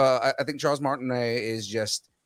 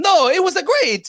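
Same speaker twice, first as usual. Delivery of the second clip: put-on Italian accent, higher and louder; 10 dB louder than usual. Retelling a movie scene where Mario answers about the accent: imitating Mario's accent. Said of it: "You think the accent was too much?".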